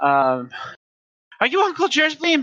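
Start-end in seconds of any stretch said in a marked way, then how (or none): 1.5-2.4 very high, top-of-the-lungs, full-volume yell. As a tiny pixie calling out to a player's character, shouting at the top of voice. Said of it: "shout at you at the top of their voice".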